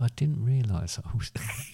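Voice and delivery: very soft, hushed voice fading away. Answering a co-host who says the voice is fading, speaking even more quietly. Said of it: "Why are you getting even quieter now?".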